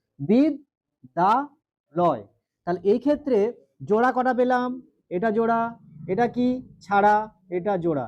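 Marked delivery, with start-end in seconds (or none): 0.2-2.3 বিদ-দা-লয় broken up slowly with pauses. Teaching syllable division in bengali: বিদ-দা-লয় slowly by syllable. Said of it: "ধীরে ধীরে উচ্চারণটা আমরা করছি".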